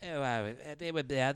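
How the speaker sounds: put-on British accent, laid on heavily. Imitating a British podcast guest: imitating a British accent. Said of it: "your British guy's on there, he's like".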